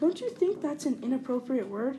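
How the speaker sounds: plain reading voice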